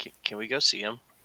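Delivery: soft, hushed half-whisper. Half-whispering back in character, asking to go see him: half-whispering. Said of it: "I'm gonna whisper back and say".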